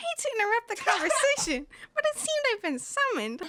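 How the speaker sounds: lamb character voice. Warming up, doing the lamb's line again in a high-pitched lamb voice. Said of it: "It's higher pitch".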